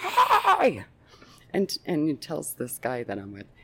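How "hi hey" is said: acted-out shrill, very high, loud yell. Recounting an obnoxious man calling out to the speaker, retelling a yell. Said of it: "so he yells".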